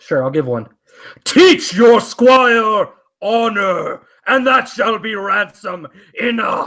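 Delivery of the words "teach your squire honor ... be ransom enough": grand, booming voice, very slow. Asked what the knight says, deliver his line in a booming voice. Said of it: "give me a booming voice".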